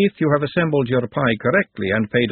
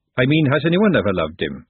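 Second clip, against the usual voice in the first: ordinary delivery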